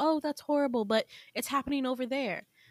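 normal talking voice

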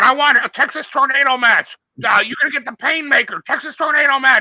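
shrieking, screaming, very high-pitched voice. Mocking AEW press conferences, acting out Jericho screaming at Sting. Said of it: "screaming at Sting with a baseball bat".

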